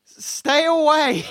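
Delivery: high, dazed, stunned, shell-shocked yell. Voicing the human not covered in gore, yelling at the party: shell-shocked yell. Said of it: "In a very shell-shocked voice".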